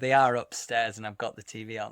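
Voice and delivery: plain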